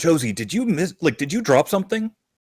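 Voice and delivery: high, half-loud stage whisper. A player voices their character asking another if she dropped something, almost a stage whisper. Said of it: "but like almost a stage whisper".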